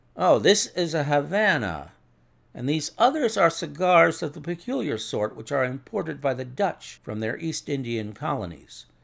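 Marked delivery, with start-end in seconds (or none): none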